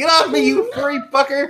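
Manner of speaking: very high, pained scream. Game master voices a character just bitten by the fire pelt, screaming. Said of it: "And you scream".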